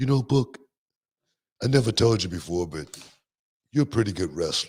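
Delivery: mild, gentle-spoken, easy voice. Retelling what a giant of a man once said to Book, imitating his soft voice. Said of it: "he had such a soft voice for a giant of a man".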